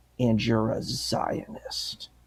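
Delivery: put-on, slow, hushed, utterly disgusted whisper. Retelling what a woman called the speaker, imitating her disgusted tone. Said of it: "with this like complete disgust in her voice".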